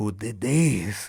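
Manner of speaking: put-on heavy, thick Spanish accent. Retelling a family incident, the speaker quotes her uncle's father in a heavy spanish accent. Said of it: "with his heavy Spanish accent".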